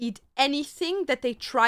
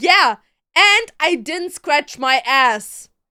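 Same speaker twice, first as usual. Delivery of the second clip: mock chest-out bragging kid voice, loud and proud; 2 semitones higher, 7 dB louder than usual. Retelling a kid boasting to his mom: imitating a proud kid. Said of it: "he was so proud of himself".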